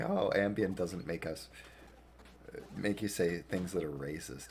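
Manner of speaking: normal talking voice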